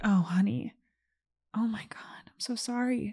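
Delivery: overdone dramatic pity, slow and really milked. Retelling a psychic's reading: imitating an overly dramatic psychic. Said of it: "she was really milking it".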